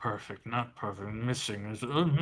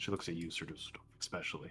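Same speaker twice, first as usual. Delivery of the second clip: normal talking voice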